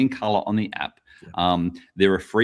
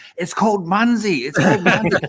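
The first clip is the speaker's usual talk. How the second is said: mock scream, higher and louder; 10 semitones higher, 4 dB louder than usual. Retelling reacting to another podcast: imitating own screaming. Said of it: "so I was screaming".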